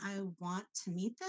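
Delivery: quiet, uncertain tone rising at the end. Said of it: "I don't want to meet them".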